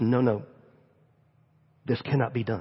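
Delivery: very low, hushed, secretive half-whisper. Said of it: "he looks at me and he whispers".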